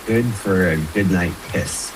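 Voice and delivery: ordinary talk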